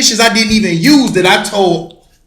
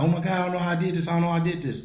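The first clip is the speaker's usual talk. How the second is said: put-on sobbing, tearful crying through the words; 3 semitones lower, 13 dB quieter than usual. Retelling how a little sister came over: imitating someone crying. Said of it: "she came to me crying like".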